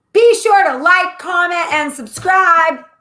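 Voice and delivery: screamed, high and drawn out. Reading the outro to viewers after being asked: screaming. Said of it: "Why are you screaming at them?".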